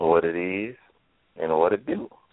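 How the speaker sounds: smooth, laid-back, calm late-night radio voice. Greeting listeners at the show's start: put-on calm quiet storm voice. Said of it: "he is so calm".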